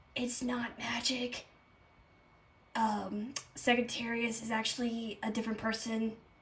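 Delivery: soft, hushed, secret half-whispered murmur. Playing a character who half-whispers an explanation into another's ear: half-whispering in character. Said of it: "I'll whisper to his ear".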